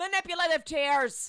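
mock, high-pitched, pointed half-yell. Retelling what someone yelled during the episode: imitating someone yelling. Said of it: "yells out".

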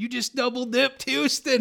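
very loud, high, excited screaming. Retelling a good friend's phone call, imitating Ty screaming. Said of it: "he's like screaming over the phone".

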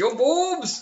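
blurted out very high and loud. Imagining a villain reading a magazine: Skeletor voice. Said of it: "when Skeletor, uh, reads Playboy, he's also like".

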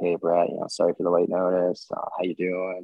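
acted flat monotone speech. Retelling a phone call offering a contract, quoting the caller: imitating a very monotone caller. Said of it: "he's very monotone".

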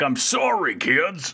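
put-on robot voice. Recapping a movie, imitating the character apologizing to the kids, in an Optimus Prime voice. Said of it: "I don't know why I'm talking like this now".

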